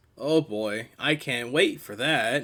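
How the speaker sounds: dry, mocking, sarcastic tone. Talking about having to do a nasal character voice: sarcastic. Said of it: "he says sarcastically".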